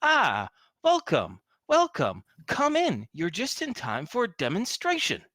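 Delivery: put-on bright, cheery, perfect American accent, high and swooping. Narrating a story, a creature greets the visitor Al: chipper American voice. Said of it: "says in a chipper voice in perfect American".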